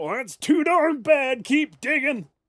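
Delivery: put-on bad, very high, very loud, shrill old-man voice. Replying to 'I'm tired, Grandpa' in the other role: awful grandpa voice. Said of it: "That was an awful voice".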